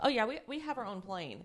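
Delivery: mock breezy, offhand, throwaway nonchalant tone. Retelling her reply in a story: imitating a nonchalant tone. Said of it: "the way she said it was just, like, so nonchalant".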